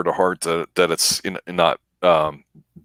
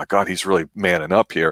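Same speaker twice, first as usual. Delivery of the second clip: put-on excited voice. Retelling a TV scene where Lucy gets excited: imitating excited Lucy. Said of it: "Lucy looks like she's getting all excited".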